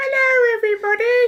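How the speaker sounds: very high, loud, squeaky little voice. Telling about reading a short story aloud, little Greg the Sausage Roll voice. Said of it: "I put on the best little voice for Greg".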